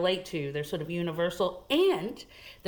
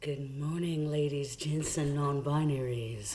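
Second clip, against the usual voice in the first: low, smooth, cool and calm radio-presenter voice; 5 semitones lower, 3 dB quieter than usual. Radio guest greeting listeners on air, in a cool radio voice. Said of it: "I'm trying to have my cool radio voice".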